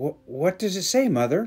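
faltering, unsure. Narrator reading young Thomas asking his mother about the letter, hesitant. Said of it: "Young Thomas hesitantly asked".

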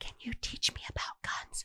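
conspiratorial, secretive whisper, very hushed. Retelling women at dinner looking behind them and asking: imitating women whispering. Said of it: "Why are you whispering?".

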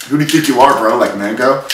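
ordinary delivery

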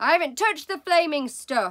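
loud, high shout. A narrator reads mr. wormwood answering his wife's accusation: shouted. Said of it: "Mr. Wormwood shouted".

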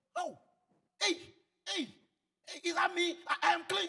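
put-on high, jubilant, relieved shouting. Retelling how a healed leper came back, imitating a man shouting for joy. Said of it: "Bible said he was shouting".

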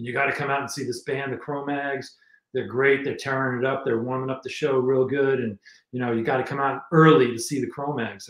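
ordinary talk, nothing marked

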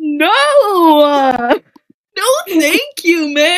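high, very slow, long-drawn No. Voicing a character who refuses a name, voice like Shaggy. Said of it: "he sounds like, almost like Shaggy".

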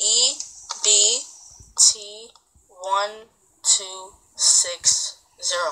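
deliberate letter-by-letter spelling. Spelling out an account number so the listener can catch up: spelled out slowly. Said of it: "I did it slow so you can, like, catch up".

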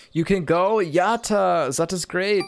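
put-on German accent. Voicing the game character B B inviting the player to the movies: put-on German accent for B B. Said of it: "doing a German accent for a French person".

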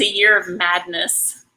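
ordinary talk

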